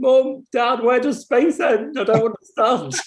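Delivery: put-on high, weepy, tearful, pleading child's cry. Retelling running to mum and dad as a child: imitating own childhood crying. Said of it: "crying, going".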